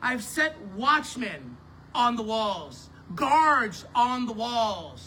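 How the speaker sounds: drawn-out, slow, deliberate reading aloud. Rereading a scripture passage aloud, reading it slower. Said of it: "I'm going to read that slower".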